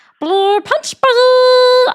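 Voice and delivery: shrill, very high, very loud voice, buzz drawn out. Showing what a voice impression is: Stitch voice impression. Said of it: "I am making fun of Stitch".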